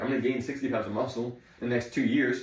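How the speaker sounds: plain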